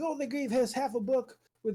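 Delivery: high, mocking, outraged, complaining tone. Imitating outraged players to make fun of them: mocking voice of outraged people. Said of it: "when I do that voice, I'm obviously trying to make fun of these people".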